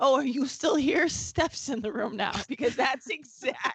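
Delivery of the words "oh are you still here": normal, casual speaking voice. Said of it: "when you're like".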